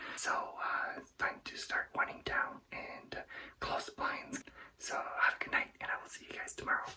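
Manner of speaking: hushed whisper. Vlogger signing off at night with people asleep behind thin walls: whispering. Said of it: "I'm whispering because the walls are paper thin".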